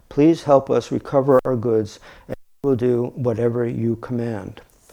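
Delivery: ordinary delivery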